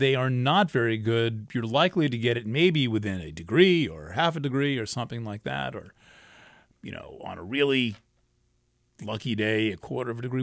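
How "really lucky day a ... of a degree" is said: ordinary talk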